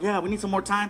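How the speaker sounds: ordinary delivery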